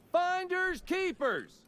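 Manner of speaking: high, slow, drawn-out, loudest-voice shout. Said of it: "called out in my loudest voice".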